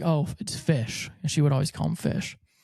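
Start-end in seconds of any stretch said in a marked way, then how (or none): 0.0-1.1 tearful, weeping, sobbing voice. Retelling a FaceTime call after reconnecting: imitating someone sobbing. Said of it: "she's sobbing 'cause she's like".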